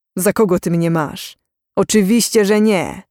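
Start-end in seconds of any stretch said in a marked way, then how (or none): none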